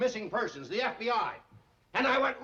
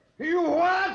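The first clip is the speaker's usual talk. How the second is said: sudden, high, loud yelling outburst; 7 semitones higher, 7 dB louder than usual. The chief hears a shelter truck came for the pets, shouting. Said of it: "Still shouting".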